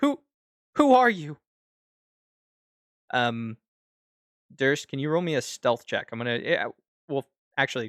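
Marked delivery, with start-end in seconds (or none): 0.0-1.4 shocked, startled, very high yelp. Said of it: "he's going to shout".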